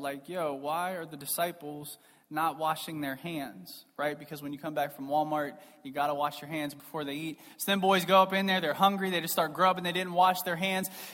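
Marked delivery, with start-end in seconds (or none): 0.3-3.9 soft, hushed, under-the-breath grumbling. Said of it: "kind of maybe under their breath".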